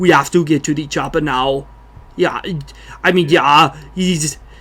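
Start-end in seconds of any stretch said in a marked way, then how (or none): 0.0-1.7 very subtle, understated Austrian accent. Showing a subtle version of the voice: Arnold Schwarzenegger voice. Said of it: "I can do a good Arnold Schwarzenegger".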